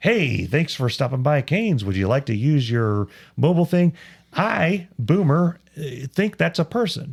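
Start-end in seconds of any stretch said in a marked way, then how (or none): 0.0-3.9 automated, machine-like recorded voice. Retelling a drive-through greeting, imitating an automated voice. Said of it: "an automated voice says".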